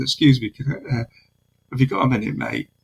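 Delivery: put-on casual, offhand, relaxed, easygoing, Manchester accent. Retelling how he walked up to a man to speak to him, retelling a casual greeting. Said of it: "as we do in Manchester, quite casual".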